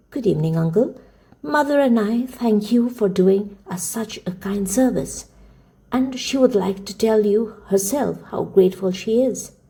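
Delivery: plain reading voice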